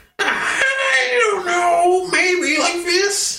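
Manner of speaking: very high shriek, drawn out long. Imitating the old man Whitey's voice from the movie: high shrieking Whitey voice. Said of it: "it's like a high shriek".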